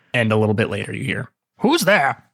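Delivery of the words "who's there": put-on very high old man voice. Voicing a character answering a knock at the door: voice like Book's dad, twenty years older. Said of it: "this sounds exactly like Book's dad, but in twenty years".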